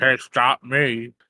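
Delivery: acted talking with food in mouth. Voicing a character stuffing an egg in her mouth, mouth full. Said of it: "she says with her mouth full of".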